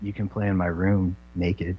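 imitated under-breath muttering. Retelling what a woman said to the band's other guitarist, imitating someone muttering under breath. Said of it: "under her breath".

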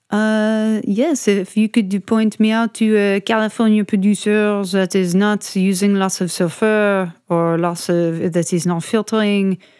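put-on French accent on English. Retelling what a customer asked for, in a french accent. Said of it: "I'm going to like French accent".

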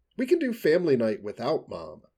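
ordinary delivery, nothing marked

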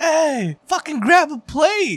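put-on, very high, drawn-out holler. Retelling calling out to the homie at the buffet: imitating own past yelling. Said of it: "I remember yelling at him like".

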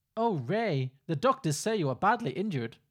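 very loud, put-on, attempted Belgian accent. Performing a scene with a partner playing Ray; attempted Belgian accent. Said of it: "I'm trying for a Belgian accent".

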